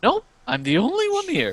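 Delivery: very high character voice with swooping, swinging pitch. Voicing a wizard who sends the players elsewhere: Scooby-Doo voice. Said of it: "He sounds like Scooby-Doo".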